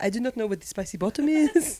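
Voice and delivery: English with a fake French accent. Asked a question, the speaker answers in a French accent. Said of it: "That was my French accent".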